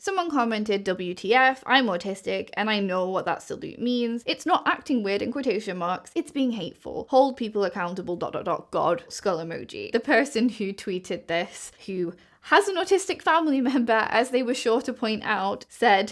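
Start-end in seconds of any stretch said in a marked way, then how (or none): none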